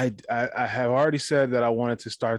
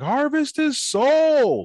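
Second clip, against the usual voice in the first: put-on very high, rowdy, swooping, drunken shout; 7 dB louder than usual. Retelling how they shouted at the wrestling on the screen: retelling a shout. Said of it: "we'd be shouting like".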